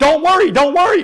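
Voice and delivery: shrill, very loud, high-pitched scream at full volume. Retelling screaming back at the cop: retelling his own scream. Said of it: "I screamed back at him".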